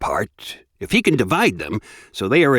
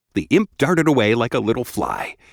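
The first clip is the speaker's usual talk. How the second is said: plain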